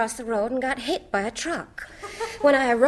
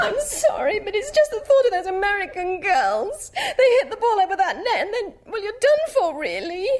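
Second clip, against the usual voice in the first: high, tearful speech through sobs; 8 semitones higher than usual. Asked about Britain's chances in the Whiteman Cup, answering while crying. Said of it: "please don't cry".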